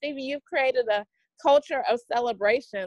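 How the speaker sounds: normal talking voice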